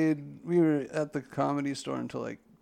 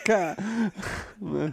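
high-pitched vocal gunfire sound effect. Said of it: "You're like".

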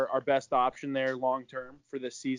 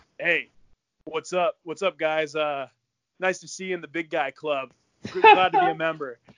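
loud, chest-puffing, puffed-up big-guy swagger; 2 semitones higher, 5 dB louder than usual. Retelling what a teammate said in the weight room: imitating a chest-puffing teammate. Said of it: "he's a big, uh, chest puffer".

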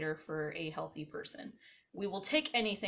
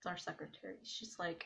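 plain

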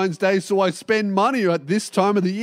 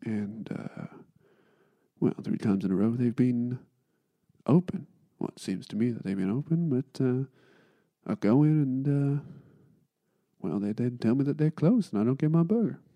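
smooth radio announcer voice, lower, quieter; 8 semitones lower, 8 dB quieter than usual. Speaker redoes his show intro the way he wishes he had, Smooth FM announcer voice. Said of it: "like one of those announcers on like Smooth FM".

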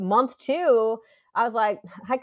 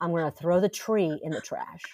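low, quiet, scary, close-up menacing voice; 5 semitones lower, 5 dB quieter than usual. Retelling threatening a screaming child up close: retelling own quiet, scary threat. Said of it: "So I got quiet and scary".

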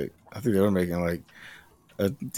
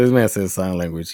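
usual speaking voice

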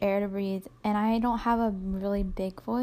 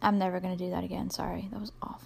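plain

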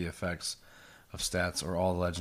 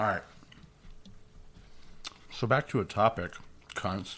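speaking while eating, mouth full; 3 semitones higher than usual. Eating into the mic, the speaker steers back to the topic; talking with mouth full. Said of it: "Sorry, I'm eating in the mic".

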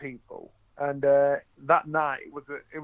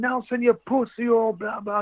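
mock high, jeering heckler's yell; 8 semitones higher than usual. Retelling a ringside fan's insult: imitating someone shouting. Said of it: "he's shouting".

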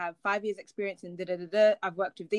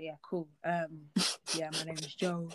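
faked low, flirty voice, trying to sound cute; 3 semitones lower, 6 dB quieter than usual. Retelling a guy's chat-up line: imitating a put-on deep voice. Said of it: "put on, like, their deep voice".

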